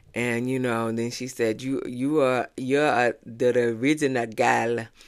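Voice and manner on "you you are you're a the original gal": rough, weak, not-so-good put-on Jamaican accent. Quoting one woman's praise of another woman, not-good jamaican accent. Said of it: "I ain't got a good Jamaican accent, but it was a Jamaican accent".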